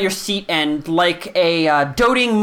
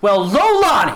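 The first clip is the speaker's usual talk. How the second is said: loud call, as if across a room; 3 semitones higher, 3 dB louder than usual. Voicing a character who calls out across the room: calling out across a room. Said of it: "you hear a voice call out across the room".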